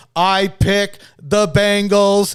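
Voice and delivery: robotic flat monotone, very slow and drawn out. Mocking another speaker's pick as an edited video loop: computer voice. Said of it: "just over and over again in computer voice".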